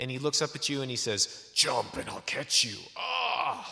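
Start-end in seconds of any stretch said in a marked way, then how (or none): 1.5-3.7 grunting, strong, burly man voice. Acting out a fireman built like a tank calling up to someone: grunting strong fireman voice. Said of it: "Like that. He even grunts".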